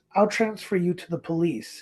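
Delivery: ordinary talk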